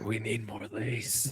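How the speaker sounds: slow, hushed, drawn-out half-whisper. Acting out an imagined guy with a lace fetish, acting out a half-whisper. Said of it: "Just like whispering to them".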